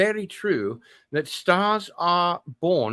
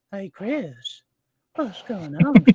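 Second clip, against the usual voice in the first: imitated creepy old man voice. Showing off the old man who chases Chris around: creepy old man impression. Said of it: "that old man who's a little pedophile".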